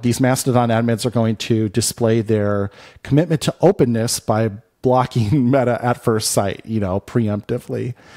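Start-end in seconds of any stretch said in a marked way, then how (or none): none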